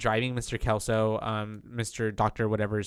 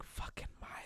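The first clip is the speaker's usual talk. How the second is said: put-on mutter under breath, quieter. Retelling a character's remark about a kid: imitating muttering under breath. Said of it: "Under her breath".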